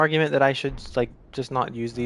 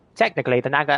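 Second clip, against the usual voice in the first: imitated Australian accent; 4 dB louder than usual. Retelling a video maker's weapon rant: imitating an Australian accent. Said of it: "I can't do his accent".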